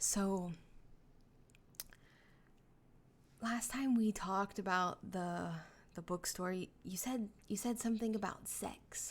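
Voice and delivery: near-whispering put-on character voice. Voicing Roman leaning in to ask a question: Roman almost whispering. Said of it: "almost whispering".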